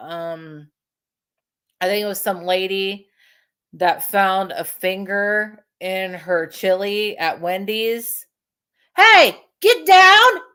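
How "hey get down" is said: sharp, shrill, very high, very loud scolding yell. Breaking off mid-story to order a pet down: yelling at a pet. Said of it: "I had to yell at her".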